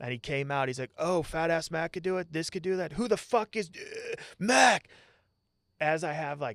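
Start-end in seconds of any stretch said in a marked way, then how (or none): 1.0-4.9 put-on furious drill-instructor outburst, loud and high. Retelling a drill instructor storming out of a hut: imitating an angry drill instructor. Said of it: "coming out of the duty hut angry".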